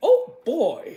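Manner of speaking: very high, loud, squeaky voice. Retelling getting a toy while a nephew watched, in a Mickey Mouse voice. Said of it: "But I did it in a Mickey Mouse voice".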